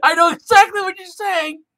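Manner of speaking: high, loud excited exclamation. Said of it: "I was like".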